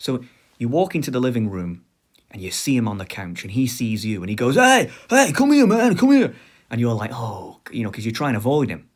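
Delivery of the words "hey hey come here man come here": put-on very high, loud, slurred drunken voice. Retelling what the family's drunk relative says from the couch, imitating drunken slurring. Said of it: "he does that thing that alcoholics do where they slur the words".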